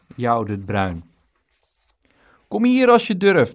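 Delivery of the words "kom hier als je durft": very loud, high-pitched yelled shout. Taunted from a distance, Dick answers his taunter, shouting back. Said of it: "schreeuwde Dick terug".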